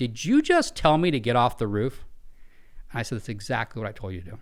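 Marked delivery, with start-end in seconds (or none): 0.0-2.0 slow, angry, demanding put-on tone. Retelling what a man on the roof asked back, mock-angry. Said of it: "the tone of voice gets gets angry".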